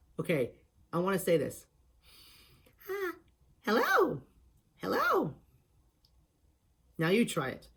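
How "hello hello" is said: very high, swinging-pitch cartoon voice, tongue pulled back. Showing how to do the voice with the tongue pulled back: Cosmos voice impression. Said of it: "say some words like you hear in the movies".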